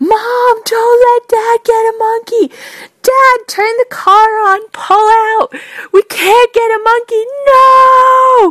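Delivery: mock very high, sobbing, terrified child, drawn-out 'no'. Retelling a child's panic in the car, imitating a screaming, crying child. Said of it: "screaming, crying ... utter screaming terror".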